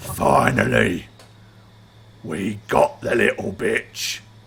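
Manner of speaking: rough, gruff orc creature voice. A storyteller voices an unseen orc the listeners overhear, orc voice speaking Orcish. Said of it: "in Orcish, you hear a voice say".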